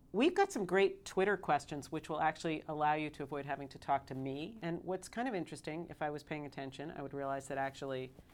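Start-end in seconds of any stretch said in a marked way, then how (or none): none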